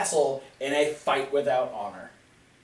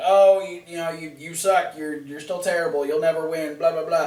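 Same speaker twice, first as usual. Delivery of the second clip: ordinary delivery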